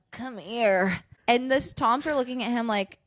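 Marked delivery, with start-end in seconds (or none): 0.1-0.9 mock nasty, sloppy drunk voice. Retelling how a girl beckoned after wiping her mouth: imitating a nasty drunk. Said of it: "nasty drunk style".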